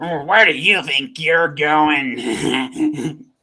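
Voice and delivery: slow gnoll guard monster voice. Voicing a gnoll stopping a player walking past: voicing a gnoll guard. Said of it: "he's like".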